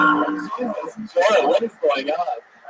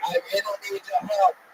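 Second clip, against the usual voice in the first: fake, put-on English accent held throughout; 4 dB quieter than usual. Imagining a legless person crawling in asking for help: put-on English accent. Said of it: "I don't know why they would have an English accent".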